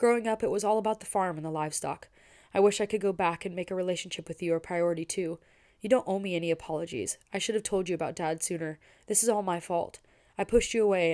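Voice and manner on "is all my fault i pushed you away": plain reading voice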